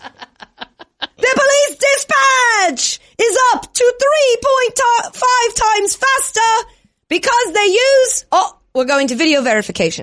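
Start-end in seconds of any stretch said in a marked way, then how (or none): 0.1-8.2 high, slow, shouted British football commentator voice. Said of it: "as if you were the play-by-play announcer at a soccer slash football".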